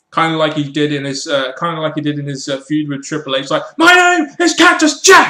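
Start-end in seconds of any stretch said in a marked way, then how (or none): 3.8-5.3 very high, raised, drawn-out emotional shout. Recalling a wrestling feud, imitating Mick Foley raising his voice emotionally. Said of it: "he would raise his voice and get all emotional".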